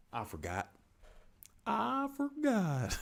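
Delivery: very high, meandering, swooping, drawn-out sing-song. Forgetting the name of a plant: Forgetful Jones impression. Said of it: "That is my impersonation of Forgetful Jones".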